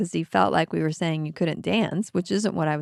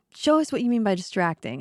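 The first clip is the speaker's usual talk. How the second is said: ordinary delivery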